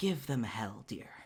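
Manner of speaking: whispering entity voice. Storyteller voices a voice in the listener's head, like an entity whispering over their shoulder. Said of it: "almost like an entity whispering over your shoulder".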